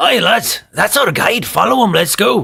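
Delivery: loud, called-out dwarf character voice. Voicing the dwarf Thulgrim urging the group to follow the guide: voicing Thulgrim the dwarf. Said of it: "Thulgrim comes out".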